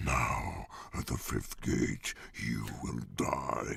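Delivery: very low, rough, hard rock metal demon growl. A voice actor recalls the audition voice they wanted, in a hard rock metal demon voice. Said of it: "that hard rock metal demon that you did".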